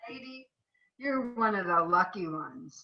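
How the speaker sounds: put-on speech as if through a cigarette. Retelling what a junkyard worker said: imitating talking through a cigarette. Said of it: "He was talking through his cigarette".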